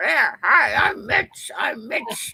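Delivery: showy, put-on, loud, slow, drawn-out voice. Retelling imitating Mitch with a meat stick as a cigar: imitating Mitch. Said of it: "we were imitating Mitch".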